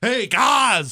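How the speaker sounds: overacted put-on voice, high-pitched and loud. Mocking a man the speaker calls an overactor: The Miz impression. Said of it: "Here's my impression of impression of The Miz".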